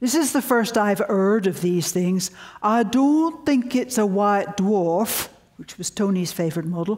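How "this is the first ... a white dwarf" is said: slow, imitated Yorkshire accent. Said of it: "I'll imitate his Yorkshire accent".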